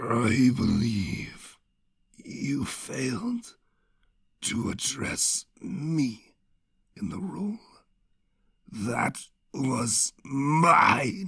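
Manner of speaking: rasping, gurgling, very slow, soft, halting drawl. From the darkness, a figure answers the self-proclaimed queen, in a rasping, gurgling, slow voice. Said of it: "A rasping, gurgling, slow voice".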